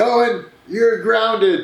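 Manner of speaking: play-acted high, shrieking screamed yell. Retelling a movie scene where Mama screams at Owen: imitating Mama screaming. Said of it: "she just screams".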